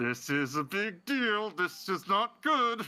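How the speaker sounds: high, pushed out through gritted teeth. Kyra sends a telepathic message to the group: through gritted teeth. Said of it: "her saying through gritted teeth".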